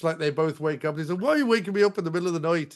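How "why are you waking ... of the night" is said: clumsy, bad, fake put-on Irish brogue. Retelling a film scene where a woken man questions a woman, bad irish accent. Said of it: "they're inexplicably Irish".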